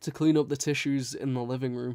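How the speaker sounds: plain reading voice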